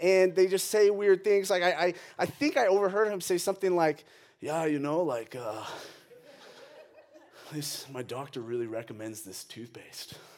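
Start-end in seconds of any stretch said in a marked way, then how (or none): 4.4-10.1 put-on cool guy voice, not his own. Retelling what a new boyfriend said at Target: imitating a cool guy voice. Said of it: "this thing I call the cool guy voice".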